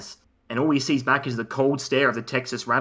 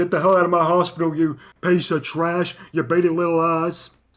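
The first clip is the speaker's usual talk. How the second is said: put-on yelling voice, pitched higher; 5 semitones higher, 3 dB louder than usual. Describing a story vignette to the others, mock-yelling as Stone Cold Steve Austin.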